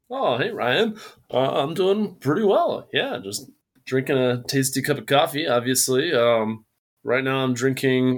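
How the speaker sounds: put-on sing-song television presenter voice. A coffee roaster guest answers the host's greeting, in a tv voice. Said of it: "Are you using some sort of TV voice with me right now?".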